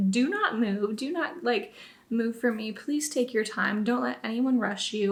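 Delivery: ordinary delivery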